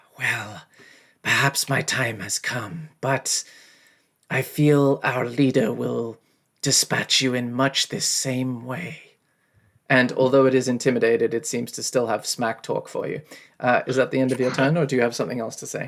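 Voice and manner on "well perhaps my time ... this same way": slow, drawn-out hissing serpent voice. A game master voices a snake-headed creature taunting the players, in a hissing snake voice. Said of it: "it says in a sort of hissing voice".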